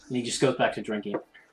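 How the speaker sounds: ordinary talk, nothing marked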